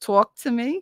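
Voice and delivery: put-on New Jersey accent, laid on thick. Asked to talk with a Jersey accent, showing it off in a Jersey accent. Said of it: "talk to me with that Jersey accent".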